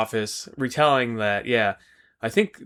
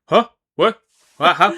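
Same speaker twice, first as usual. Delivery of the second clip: mock very loud, high, baffled, lost-sounding blurt; 7 semitones higher, 9 dB louder than usual. Retelling a scene, imitating a confused Commissioner Gordon. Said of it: "looks stupid as shit when he's trying to figure it out".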